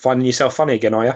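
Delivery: mock dry, flat, disapproving deadpan. Retelling a disapproving remark from his wife: imitating wife's deadpan remark. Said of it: "deadpan face and goes".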